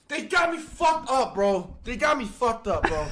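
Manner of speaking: angry raging yelling. Reacting to a play going wrong in the game: raging. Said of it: "Sorry for the rage".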